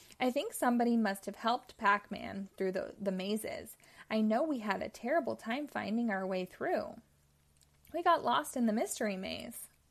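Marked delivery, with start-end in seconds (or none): none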